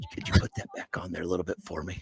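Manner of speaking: very quiet, hushed, secretive whisper. Retelling how a diner quietly asked the server to cook it more: imitating someone whispering. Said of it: "totally whispers".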